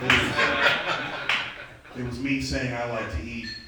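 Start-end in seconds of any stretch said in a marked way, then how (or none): 0.0-1.3 slow, laughing, drawn-out delivery.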